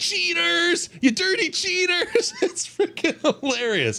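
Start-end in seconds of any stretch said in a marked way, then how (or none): 0.0-2.3 mock very high, drawn-out drunken yelling. At a game, the speaker acts out the guy behind him, imitating a fan yelling. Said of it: "he just starts yelling".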